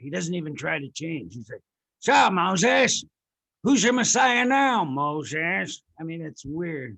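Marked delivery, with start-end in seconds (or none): 2.0-5.8 slow, loud New York gangster voice, "Moses" drawn out. Discussing The Ten Commandments, speaker does an Edward G. Robinson impression. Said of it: "sounds like a New York gangster".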